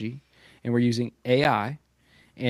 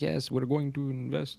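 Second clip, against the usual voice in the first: terrible put-on Japanese accent, soft; 8 dB quieter than usual. Retelling what one of three billionaires said, terrible Japanese accent. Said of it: "That was a terrible Japanese accent".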